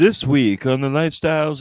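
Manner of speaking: failed cartoonish character voice. Admitting he's butchering it, the speaker tries a Lifestyles of the Rich and Famous voice. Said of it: "I still sound like Marvin the Martian".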